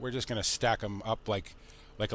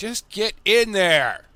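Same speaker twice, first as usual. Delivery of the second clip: exasperated, very loud, high-pitched frustrated shout; 10 semitones higher, 14 dB louder than usual. Too early in the morning, struggling with something hard, yelling in frustration. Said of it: "Sorry guys if I'm yelling".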